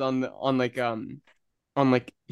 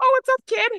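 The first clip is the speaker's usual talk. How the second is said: very high, loud, shrill, cartoonish voice; 5 dB louder than usual. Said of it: "His voice sounded the exact same as mine".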